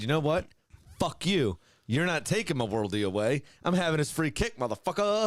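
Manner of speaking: mock cocky, defiant, swearing voice. Imagining a footballer's defiant words after his goal was taken away: imitating McAllister, defiant. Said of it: "imagine he said it just like that".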